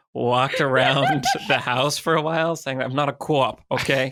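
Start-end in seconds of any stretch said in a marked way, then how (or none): 2.8-4.2 terrible fake Boston accent, slower. Walking around the house after the producer asked if they're a cop: terrible Boston accent. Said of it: "doing this a terrible Boston accent".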